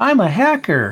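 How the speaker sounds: thin, squeaky, high cartoon character voice. Speaker can't recall a Simpsons character's name, then does the character: squeaky Simpsons character voice. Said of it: "that squeaky voice".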